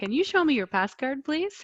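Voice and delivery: friendly, polite automated voice. Reading aloud an app's spoken prompt: imitating a friendly app voice. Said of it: "it's a very friendly voice saying".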